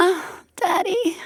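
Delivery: very high, breathy cooing sigh. Showing how she would say it during sex: quiet, breathy delivery. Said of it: "Like that, quietly".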